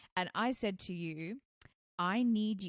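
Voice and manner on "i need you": put-on harsh, firm tone, louder. Retelling own words after a joke woke the baby: retelling own harsh, firm words. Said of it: "I said very, very, very harshly and firmly".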